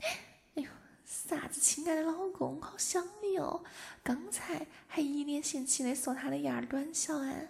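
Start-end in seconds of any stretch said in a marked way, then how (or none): 1.1-3.6 put-on high, cutesy, coquettish, babyish whine. Acting out someone sweet-talking her husband, mock-coquettish baby voice. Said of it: "撒起娇来嗲声嗲气的".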